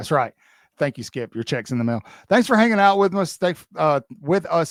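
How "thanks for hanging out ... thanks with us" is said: stumbling, stuttering, pitched-up delivery. Host thanking listeners at the end of the show, stuttering. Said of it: "I'm stuttering all over the place today".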